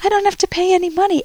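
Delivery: put-on very high-pitched Vietnamese accent. Quoting a traveler showing off his computer, in a Vietnamese accent. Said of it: "he says this in a Vietnamese accent".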